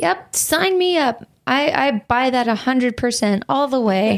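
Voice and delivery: sarcastic, plainly unconvinced, heavy skepticism. Answering a claim about a company not using stored pictures: skeptical sarcastic tone. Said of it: "You sound so skeptical".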